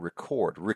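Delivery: record with the second syllable -cord stressed. Explaining two words spelled the same way, stress on second syllable of record. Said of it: "the more pronounced syllable is the second one".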